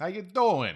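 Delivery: very loud, very high, put-on New York accent. Speaker announces an accent over a coffee mug, new york accent. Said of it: "New York accent over here".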